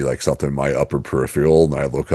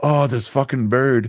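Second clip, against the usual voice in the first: put-on Indian accent in a high voice; 11 semitones higher than usual. Speaker quotes a man cursing at a bird: imitating an Indian accent. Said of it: "he has like an Indian accent".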